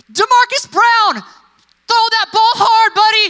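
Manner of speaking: shrill, very high, loud screaming cheer from afar. Retelling a teacher calling to a boy 200 feet away, imitating her screaming. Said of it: "she's screaming at the top of her lungs".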